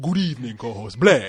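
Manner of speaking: low spooky vampire voice. Podcast co-hosts open a Halloween show; one greets the other in a Dracula voice. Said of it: "You gotta go blah blah".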